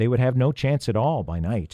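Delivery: ordinary delivery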